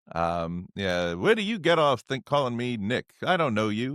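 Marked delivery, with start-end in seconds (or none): 1.1-3.9 tough, weathered bartender voice. Quoting the hardened bartender Nick from the film: Sheldon Leonard voice. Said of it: "just a great distinct voice".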